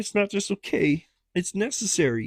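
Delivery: very high-pitched cartoon-style frog voice. Quoting a man's answer to a question, in a Kermit-like quoting voice. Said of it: "sound like Kermit".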